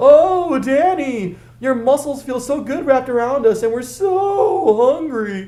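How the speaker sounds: over-the-top, very high, exaggerated falsetto, slow. Narrator reads Frank needling his partner Dash in the car, in a high exaggerated falsetto. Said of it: "speaking in a high exaggerated falsetto".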